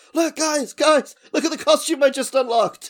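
shrill, shrieking, high and loud scream. Acting out a developer running into the main room: screaming.

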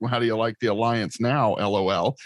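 ordinary delivery

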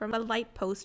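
plain

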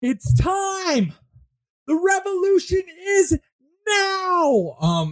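very high, drawn-out, rousing yell. Game narrator voices Erasmus calling out to the other anarchs: Erasmus yelling to crowd. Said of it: "you can now hear Erasmus like yelling to the other anarchs".

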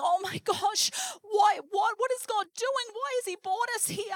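distressed, high, tearful crying voice. Recalling gunfire at night with her husband, retelling their own crying. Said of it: "my husband and I crying, going".

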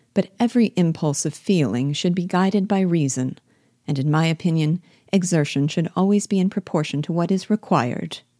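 ordinary delivery, nothing marked

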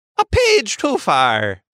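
trying a put-on Italian accent. After being told the accent sounded Scottish, the speaker tries again; attempted Italian accent. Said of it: "I can't turn it off".

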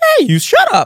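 very high, squeaky voice, pitched way up. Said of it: "his voice squeaks in awk-, in, like, strange patterns".

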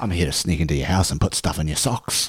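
deep, low-pitched Australian accent. Voicing Captain Christmas, the superhero version of Santa, in an Australian accent. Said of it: "Why is he Australian?".

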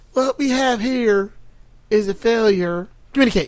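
oddly paced, halting, broken delivery. Imitating an actor's odd delivery of a famous line: imitating Strother Martin's off pacing. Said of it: "It's like the pacing's off".

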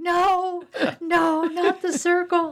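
very high, very slow, drawn-out screaming. Speaker retells a woman's reaction in front of the hospice nurse, imitating someone screaming. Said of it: "she starts screaming".

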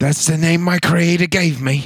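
put-on British accent. Reading a sketch line about a character's name: put-on british accent. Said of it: "I know I'm doing British".

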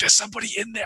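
stage whisper. Voicing a character pressed against a wall by a door: loud whisper. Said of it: "in the sort of loud whisper".

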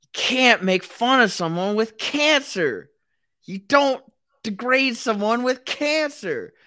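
shrill, very high, loud, repeated screaming. Retelling what a homeless guy on the Red Line kept screaming: imitating a man screaming. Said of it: "this homeless guy was screaming".

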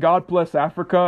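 ordinary talk

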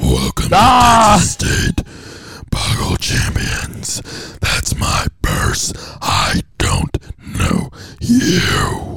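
loud, booming demonic voice. Playing a Boggle grandmaster commentating the final match, Satan voice. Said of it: "That's my my Satan voice".

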